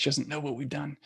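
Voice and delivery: hushed whisper. Talking while the little sister is ten feet away; whispering. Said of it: "I'm trying to whisper".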